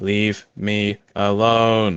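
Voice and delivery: flat, monotone, mechanical robot voice. Running a game, voicing the robot the player just attacked, in a robotic voice. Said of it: "you hear from a robotic voice".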